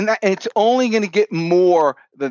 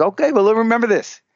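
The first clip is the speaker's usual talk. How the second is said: put-on French accent; 3 semitones higher than usual. Retelling what the father asked, in the father's French accent. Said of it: "I put on his accent".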